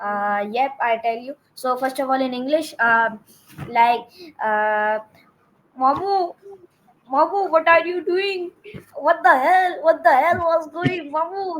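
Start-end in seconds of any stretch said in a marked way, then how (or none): 5.8-11.6 high, animated cartoon character voice. Showing the interviewer one of her cartoon voices, in a cartoon character voice. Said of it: "So the her voice is like that".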